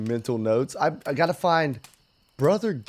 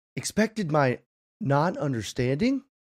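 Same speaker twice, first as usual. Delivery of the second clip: mechanical robot voice. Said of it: "That's my best robot voice".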